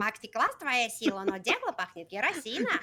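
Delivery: acted character voice, speaking Russian. Asked by another speaker to do it, he performs the Russian Jar Jar Binks voice. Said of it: "Can you do the Russian Jar Jar?".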